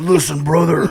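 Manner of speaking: gruff, growling pro-wrestling promo voice. Telling how people come up to him, speaker answers one in a Hulk Hogan impression. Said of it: "that's my best Hulk Hogan impression".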